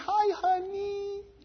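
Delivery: toned down, very high and very soft voice. Speaker showing how he tones down his voice so children aren't afraid, talking real high. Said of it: "talk real high".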